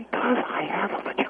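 soft whisper under the breath, hard to hear. Repeating a point the other speaker could not hear, whispering. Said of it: "you're whispering again".

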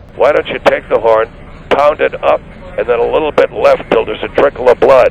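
ordinary delivery

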